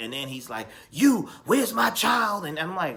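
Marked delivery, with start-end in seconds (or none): 0.9-2.5 yelling, higher pitch. Retelling a scene where Barry demands his child: imitating someone yelling. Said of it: "He's yelling at her".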